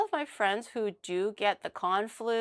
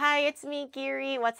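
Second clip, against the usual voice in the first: cute idol-style delivery, higher; 5 semitones higher than usual. Saying the catchphrase greeting the chat keeps asking for: cute catchphrase delivery.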